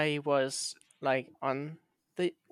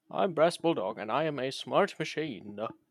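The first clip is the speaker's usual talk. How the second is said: slow, deliberate, teasing, mocking put-on parody voice. Teasing the other speaker by mimicking how they sound: mocking imitation of Brass Bulldog. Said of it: "That is what you sound like".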